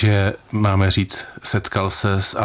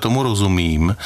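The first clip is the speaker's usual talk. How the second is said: ordinary talk, nothing marked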